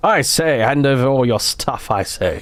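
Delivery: put-on proper British gentleman accent, playing tough. Streamer acting out a bandit random encounter, in a proper British gentleman voice. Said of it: "like a proper British gentleman voice".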